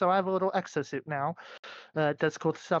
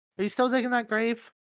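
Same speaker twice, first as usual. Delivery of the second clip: high, teasing, mocking tone; 5 semitones higher than usual. Voicing a character asking about a grave: mocking tone. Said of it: "she kinda mockingly says".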